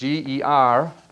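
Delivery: attempted American accent on spelled-out letters. Spelling an author's name, trying an American accent. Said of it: "I'm trying my best American accent".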